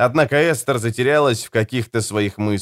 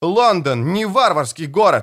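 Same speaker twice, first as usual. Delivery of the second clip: high-pitched, loud, yelled delivery; 7 semitones higher than usual. He retorts to a speaker planning to attack London: yelling. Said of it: "заорал Том".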